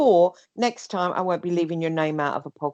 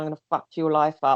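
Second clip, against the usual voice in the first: put-on aggressive, nasty tone. Retelling a threat someone made last night: imitating an aggressive, nasty threat. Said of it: "in an aggressive, nasty way".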